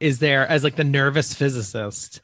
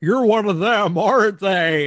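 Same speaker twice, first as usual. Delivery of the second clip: put-on American accent, pitched higher and strained; 6 semitones higher, 4 dB louder than usual. Quoting a film villain who pretends to be a hostage: Jimmy Stewart impression. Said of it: "kinda doing, like, a Jimmy Stewart".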